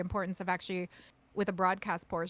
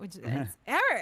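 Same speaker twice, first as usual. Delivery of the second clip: fancy French accent with refined inflection. Saying a name again after asking about more inflection: put-on fancy inflection. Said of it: "Should I say it with more inflection?".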